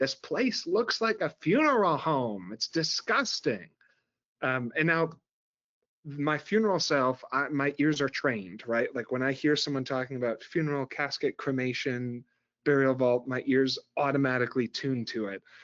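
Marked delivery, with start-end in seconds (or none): 0.0-3.7 imitated woman's voice, blurted shout, pitch swinging high. Retelling a woman at an airport gate: imitating a woman shouting. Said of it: "kind of shouts or screams out".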